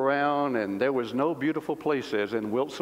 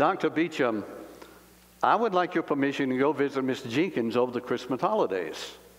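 ordinary talk

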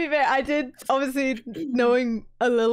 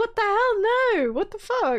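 mock very high, startled, innocent, shocked outburst; 9 semitones higher than usual. Calling a game character a good liar and acting out his reaction: imitating surprised denial. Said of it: "he sounded completely surprised".

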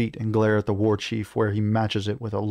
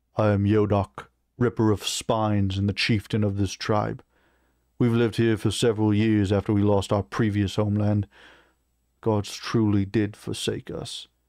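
ordinary delivery

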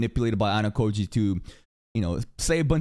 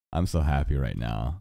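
low, mock deadpan monotone delivery.

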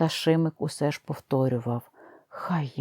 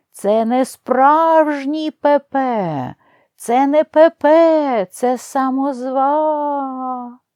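high, shrill, booming, drawn-out full-lung scream; 11 semitones higher, 11 dB louder than usual. Narrator reads Zhabo's outcry after a full breath: shouting at the top of his voice. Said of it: "Жабо викрикнув, скільки ставало голосу".

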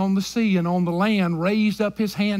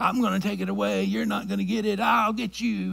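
put-on witch voice, quieter; 5 dB quieter than usual. Speaker voicing Satan's words, likened to the Wizard of Oz witch voice. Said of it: "like the old witch in Wizard of Oz".

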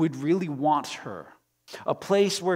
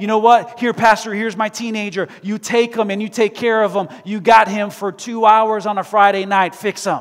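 sarcastic mocking imitation; 4 semitones higher, 10 dB louder than usual. Speaking to a church congregation, acting out the parents, sarcastic imitation of parents. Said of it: "and we say".

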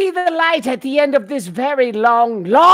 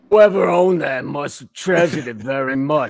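put-on gruff voice, lower; 9 semitones lower than usual. Taking a turn performing a requested character line: Husk voice. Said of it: "I'll do Husk".

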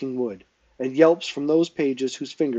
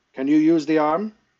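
gruff, brusque, higher; 3 semitones higher, 3 dB louder than usual. Lord Wilden walks over to his lads and asks Kel a question, gruff. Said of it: "he asked Kel gruffly".

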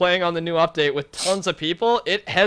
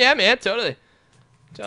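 voice cracking into a very high squeak; 4 semitones higher than usual. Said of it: "That was the biggest voice crack".

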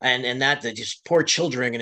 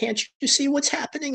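high, tearful words choked out while crying; 13 semitones higher than usual. Retelling what a crying protester said at a reading: imitating a crying protester. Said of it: "And she's crying".

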